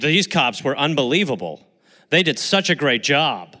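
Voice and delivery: mock ironic, overdone, sarcastic praising tone. Speaker quotes a woman to show sarcasm can read as sincere: mock-sarcastic praise. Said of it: "I'm being sarcastic".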